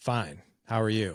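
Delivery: put-on cold, unfriendly tone. Retelling greeting an estranged father: retelling a cold, curt reply. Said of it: "but I wasn't nice to him".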